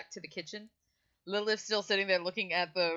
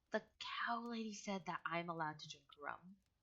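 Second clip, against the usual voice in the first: very quiet, half-whispered aside; 12 dB quieter than usual. Voicing a young character telling the bartender a secret: half-whispering. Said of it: "whispering to the".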